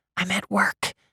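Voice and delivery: hushed whisper. Telling a caller you are at work: whispering. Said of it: "I whisper".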